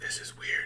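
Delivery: whispered, hushed, breathy theatrical stage whisper. Retelling what an armored character said, in a stage whisper. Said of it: "sorry that was stage whisper".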